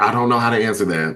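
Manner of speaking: ordinary talk, nothing marked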